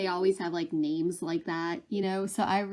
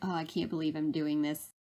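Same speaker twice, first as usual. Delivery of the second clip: put-on weary sigh; 3 semitones lower, 3 dB quieter than usual. Retelling a movie scene of a servant scrubbing bloody floors: imitating a weary sigh. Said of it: "she just sighs".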